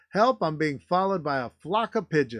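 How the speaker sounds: normal talking voice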